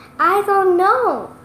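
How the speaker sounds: trembling, unsteady voice. Narrating a story, Willa answers Kendall's question about the robin: shaky voice. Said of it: "in a shaky voice".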